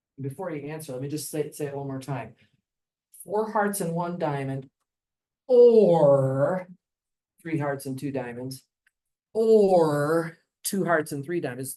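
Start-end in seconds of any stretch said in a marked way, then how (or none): 5.5-10.4 heavy stress on the word "or". Listing hearts and diamonds combinations as alternatives: stress on or. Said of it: "Notice I'm emphasizing the word or".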